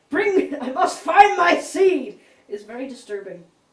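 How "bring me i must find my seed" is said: full-volume, very loud, high shouting. Retelling a movie scene where Megatron shouts in the street: imitating Megatron shouting. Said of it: "Megatron standing in the street shouting".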